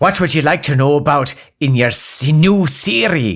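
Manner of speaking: assistant-style voice with a Cornish accent. In a sketch, the speaker plays a new voice assistant: Cornish-accent Siri voice. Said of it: "Here's a Cornwall voice for you".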